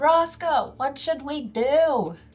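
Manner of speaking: called out with the pitch going up. Player's character calls out to a companion as the space falls apart, shouting. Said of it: "I'm like shouting".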